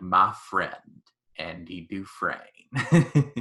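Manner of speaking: very slow, drawn-out film narration, every word stretched. Quoting a film voiceover line: Morgan Freeman impression. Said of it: "doing a Morgan Freeman impression".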